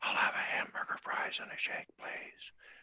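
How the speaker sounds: breathy, very quiet whisper. Demonstrating voice registers by repeating the same order, this time whispering.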